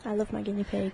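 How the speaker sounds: soft, barely audible mumble. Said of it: "Can you speak up a little bit louder".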